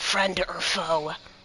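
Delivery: menacing, very threatening tone. Coming from behind, holding two axe blades to his neck, in a very threatening tone. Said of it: "in this very threatening tone goes".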